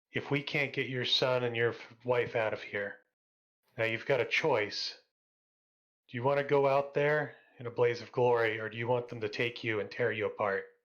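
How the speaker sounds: hushed whispering. Player's character whispers to a robot during a tabletop game; whispering. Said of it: "I start whispering to the robot".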